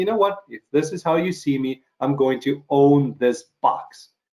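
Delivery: plain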